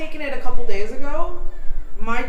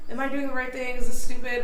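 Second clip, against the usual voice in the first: ordinary delivery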